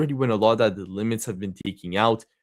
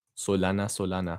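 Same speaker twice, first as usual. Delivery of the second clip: Latin-sounding accent, much quieter; 3 semitones lower, 7 dB quieter than usual. A host introduces the next coin to discuss, Latin-sounding accent. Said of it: "sounds like a Latin accent".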